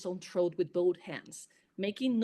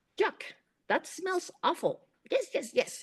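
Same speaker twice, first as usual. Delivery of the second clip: high, squeaky pixie voice, way up high; 10 semitones higher than usual. Narrator reads the pixie guardian Precious, in his high, squeaky voice. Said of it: "he said in his high, squeaky voice".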